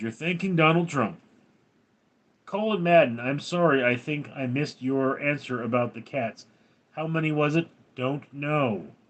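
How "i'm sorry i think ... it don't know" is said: ordinary talk, nothing marked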